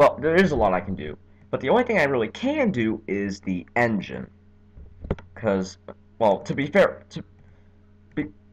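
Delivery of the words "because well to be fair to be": halting, stumbling over and repeating words, stuttering. A speaker explaining what they can change on a car in a demo, stuttering. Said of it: "sorry for stuttering like mess".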